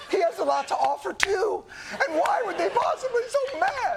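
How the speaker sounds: mock, very high, slow, choked-up, near-tears delivery. Narrating footage of Vance, the speaker goes into a mock choked-up voice. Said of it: "(CHOKED UP)".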